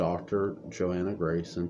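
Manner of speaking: plain reading voice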